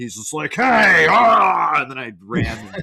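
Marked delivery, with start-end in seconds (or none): 0.5-1.8 mock yelling zombie voice, higher and louder. Retelling running past a game character who yells: imitating Chunk yelling. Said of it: "right in front of me yelling something".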